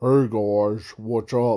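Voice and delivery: low, dark voice. Describing a character's dark side and demonstrating it, darker, deeper voice. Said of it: "darker tone, like deeper tone".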